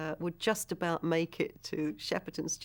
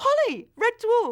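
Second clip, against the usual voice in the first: high, loud, starstruck fan cop voice. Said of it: "He's going".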